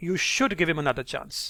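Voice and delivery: strong stress on "should". Contradicting people who say he shouldn't get another chance: stress on 'should'. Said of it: "Notice how you stress on the word can and should".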